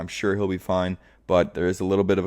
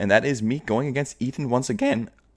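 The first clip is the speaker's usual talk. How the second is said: high voice crack, breaking mid-sentence; 5 semitones higher than usual. Previewing this week's matchup against Ethan, with a voice crack. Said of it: "a sicko voice crack".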